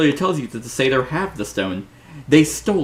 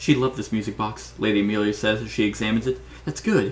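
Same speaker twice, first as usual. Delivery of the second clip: ordinary delivery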